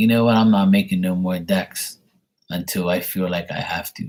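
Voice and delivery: ordinary talk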